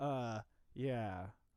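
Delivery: put-on sarcastic-sounding yeah. Imitating how the other speaker just answered: imitating a sarcastic yeah. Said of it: "you sounded really sarcastic to me".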